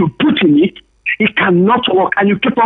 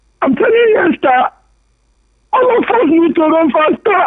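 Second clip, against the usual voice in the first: high tearful voice, speaking through tears; 9 semitones higher than usual. Speaker addressing Esther, crying while talking. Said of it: "I'm crying because we can't even see it".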